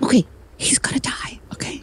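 quiet, low voice. Matching the other speaker's lowered voice while answering, lowered voice. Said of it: "so I matched your energy".

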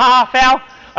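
slow, drawn-out, mocking, taunting tone. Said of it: "you gotta make fun of them".

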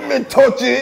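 high, loud, mock Jamaican accent.

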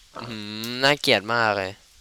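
normal talking voice

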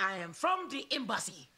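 put-on learner's unpracticed Jamaican accent, pitched high. Practicing a Jamaican accent after asking a teacher to teach it. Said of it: "teach me that Jamaican accent".

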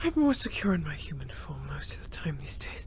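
low, soft, unvoiced whisper.

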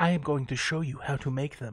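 hushed whisper. Walking the viewer through making the little spokes, whispering.

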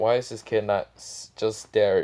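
ordinary talk

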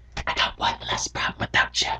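soft, eerie, creepy horror-movie whisper. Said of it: "come out of your closet and be like".

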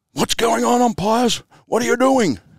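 booming voice. Retelling what John asked the umpires before the game started, in John's great booming voice. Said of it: "Great booming voice".

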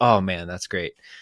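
ordinary delivery

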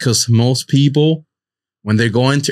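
usual speaking voice

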